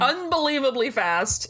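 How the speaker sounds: ordinary talk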